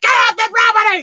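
play-acted loud hollering yell. Retelling chasing chickens off the property: imitating own yell. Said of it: "I'm yelling".

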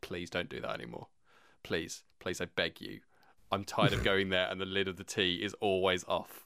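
put-on calm, stern, firm tone. Speaker quoting wife's request about tidying up, mock calm but stern. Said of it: "very calmly but very sternly say".

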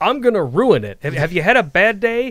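overly chipper, high, loud, bubbly gushing.

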